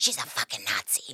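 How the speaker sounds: hushed, breathy, griping whisper. Retelling what a passenger on a plane whispered to her boyfriend: imitating a whisper. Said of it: "she whispered to her boyfriend".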